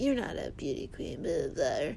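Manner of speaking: put-on under-breath mutter. Recapping a show, imitating a castmate mock muttering under breath at a man. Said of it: "Kristen is just under her breath".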